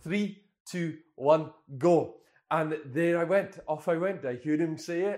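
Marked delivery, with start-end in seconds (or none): 0.0-2.2 put-on loud Scottish accent with counting-down cadence. Retelling the running app's coach starting the run, Scottish accent. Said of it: "He said in his Scottish accent".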